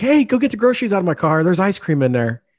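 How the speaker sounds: mock screamed shout, high-pitched. Recounting how someone suddenly screamed at them, retelling a scream. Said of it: "just screams like".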